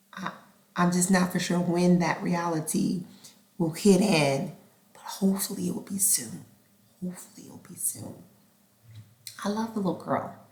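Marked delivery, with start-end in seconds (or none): 5.0-10.3 soft, hushed stage whisper. Speaker talking about the little girl, who isn't there, whispering. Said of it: "I don't know why I'm whispering".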